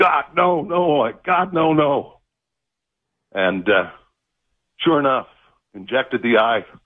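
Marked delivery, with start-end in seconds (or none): 0.0-2.2 mock very slow, high, long drawn-out wailing scream. Recounting a needle put to their eye, speaker retells their own screaming. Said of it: "I'm screaming".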